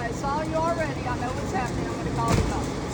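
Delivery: normal talking voice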